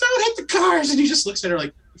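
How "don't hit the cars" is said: sudden, high-pitched shout. Recounting a movie scene where a girl yells at the driver, retelling a yell. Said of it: "she like yells at".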